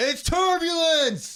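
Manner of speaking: piercing, very loud, very high shout. Joking about what to shout on a plane during rough air: pretend yell. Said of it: "I'm just gonna yell".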